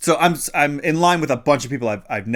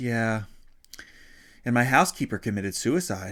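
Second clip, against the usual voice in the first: put-on flat, unconcerned deadpan tone, quieter; 6 dB quieter than usual. Retelling what a woman in line said: imitating a flat, unconcerned tone. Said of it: "She said it with the same level of intensity".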